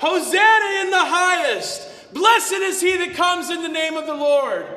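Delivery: loud, high, joyful jubilant crowd shout.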